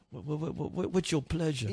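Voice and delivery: too-eager, hustling sales-pitch tone. Imitating a robot that looks like a drug dealer: imitating a drug dealer. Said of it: "He looks like a drug dealer. He's like".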